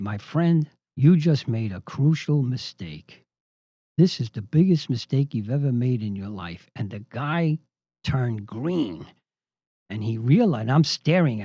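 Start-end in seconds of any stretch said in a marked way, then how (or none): 0.0-6.7 low, almost whispered movie-star impression. Speaker retells facing down a guy: Clint Eastwood low near-whisper. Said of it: "did my best Clint Eastwood imitation in a low, almost whispered voice".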